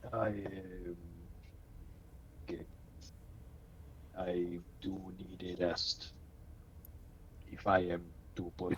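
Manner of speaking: very quiet, soft, barely voiced whisper. Answering in character about needing rest before performing: whispering in character. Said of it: "pretty quiet".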